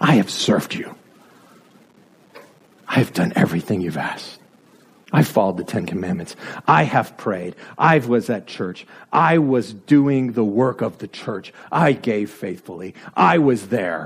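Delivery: put-on very low voice, aggrieved, angry and superior. A speaker voices the elder brother in the parable, mock-angry and superior. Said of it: "Do you hear the superiority in the elder brother's voice?".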